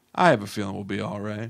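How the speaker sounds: low, soft, quiet smug tone. Describing a shot in a film, smug Jeffrey Dean Morgan impression. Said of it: "this like shit-eating grin".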